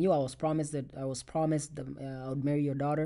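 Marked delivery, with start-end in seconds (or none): none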